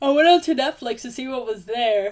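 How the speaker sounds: speaking through a yawn. Telling how they went onto Netflix early in the day, the speaker is yawning while talking. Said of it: "sorry, yawning".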